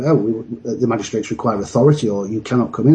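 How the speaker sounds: ordinary delivery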